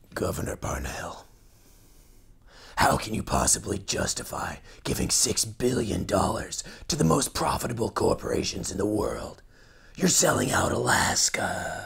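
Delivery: clumsy, bad, rough and creaky put-on superhero voice. Asking a debate question while playing the other debater: bad Batman impersonation. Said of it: "That's more like a bad Batman impersonation".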